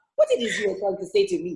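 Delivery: put-on African accent, pitched slightly up. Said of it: "self-tapes for two different projects with an African accent".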